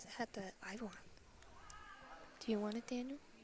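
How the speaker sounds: whispering awkwardly. Talking beside the game commentary, awkwardly whispering. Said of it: "You're very, like, awkwardly whispering".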